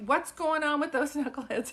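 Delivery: put-on New York accent. Repeating his line, starting to talk in a put-on new york accent. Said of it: "I almost feel like I'm gonna start talking like".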